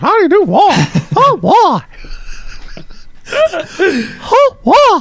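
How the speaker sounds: pitch rising very high and bouncing. Showing off old cartoon voices to the other speaker, in a Mickey Mouse voice. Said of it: "that was um, Mickey Mouse".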